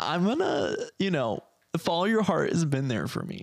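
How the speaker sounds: mock teary, overcome voice that swoops. On a podcast, a speaker thanks a brand, mock tearful. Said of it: "I'm going to tear up a little bit".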